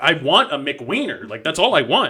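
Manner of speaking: insistent shouting. Retelling a friend's prank order at a counter: imitating someone yelling. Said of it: "and he starts yelling".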